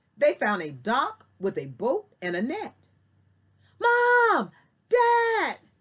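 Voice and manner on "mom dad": very high, loud calling shout. Reading a girl calling out to her parents, shouting. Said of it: "Daisy shouted".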